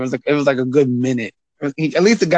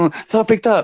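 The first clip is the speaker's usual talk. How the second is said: play-acted high, startled, frightened voice; 7 semitones higher than usual. Imitating callers who get scared when someone picks up: imitating a scared caller. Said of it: "they get scared".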